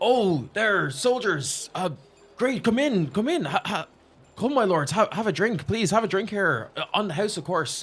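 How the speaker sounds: loud, high calling-out voice.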